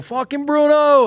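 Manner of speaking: put-on Long Island accent. Retelling cheering at an induction as a kid: imitating himself in a Long Island accent. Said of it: "I've mostly lost my Long Island accent, but not that night".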